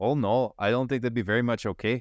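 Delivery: bad French accent. Playing a french werewolf asked for a seat, horrible stereotypical french accent. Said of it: "My stereotypical accent that is horrible".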